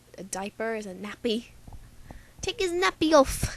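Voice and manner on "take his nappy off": really bad fake British accent, very high and loud. Explaining british words for everyday things, in a really bad british accent. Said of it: "sorry for doing this really bad British accent".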